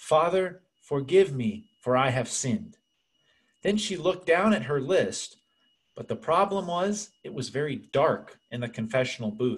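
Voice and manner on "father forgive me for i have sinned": strong, very thick put-on Spanish accent. Retelling a woman's first memorized English phrase in confession, with a very thick Spanish accent. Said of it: "with a very thick Spanish accent".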